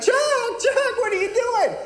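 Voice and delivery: screaming voice.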